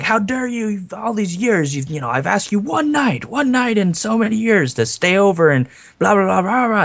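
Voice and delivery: acted, very high, shrill yelling. Retelling how a film character yells at them: imitating someone yelling. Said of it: "he's yelling at them".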